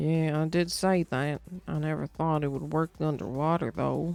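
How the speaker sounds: Southern American accent, laid on thick, put-on. Reading a game character's reply aloud: Southern accent. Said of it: "Why are you Southern now?".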